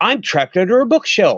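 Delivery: put-on upbeat tone. Retelling a phone call from Joe at the bookstore, imitating Joe's upbeat tone. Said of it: "in a very upbeat, positive, energy having tone".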